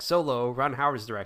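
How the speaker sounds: ordinary delivery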